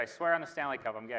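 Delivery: ordinary talk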